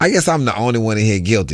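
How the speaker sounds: normal talking voice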